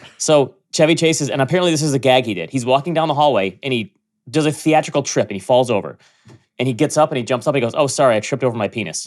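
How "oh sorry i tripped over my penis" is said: put-on arrogant voice. Retelling a movie gag after a theatrical trip: imitating Chevy Chase, put-on arrogance. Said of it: "in a very arrogant way".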